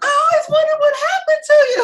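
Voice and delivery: high, loud, fast, emotional crying shout.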